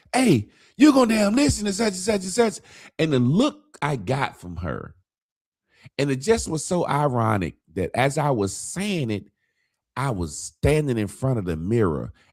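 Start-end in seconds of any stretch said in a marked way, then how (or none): 0.1-2.6 mock raised voice, very high pitched. Retelling a moment of speaking to his wife: imitating own raised voice. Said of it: "I raised my voice at my wife".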